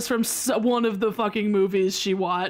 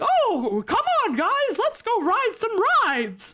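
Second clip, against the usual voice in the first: very high cartoon voice with big pitch swoops; 11 semitones higher than usual. Retelling a theme park commercial: Mickey Mouse impression. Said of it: "shockingly decent Mickey Mouse impression".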